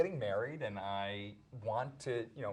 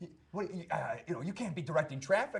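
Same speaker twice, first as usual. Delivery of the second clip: mock shouting like a man, higher; 4 semitones higher than usual. Retelling a man who interrupted the show and shouted at them, retelling a shout. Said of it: "He shouts".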